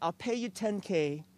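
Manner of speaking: put-on British accent. Retelling what a man he showed a home to told him, put-on British accent. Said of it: "in his British accent".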